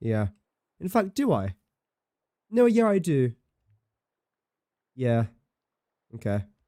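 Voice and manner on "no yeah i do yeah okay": sounds put out and upset. Player working out how many pipes are still coming, sounding upset. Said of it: "I don't know why I sound so upset".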